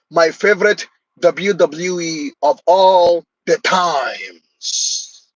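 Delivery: slow, drawn-out put-on voice, every word dragged. Listing favorite wrestlers, then saying it in a Santino Marella impression. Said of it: "Let me say it like Santino Marella would say it".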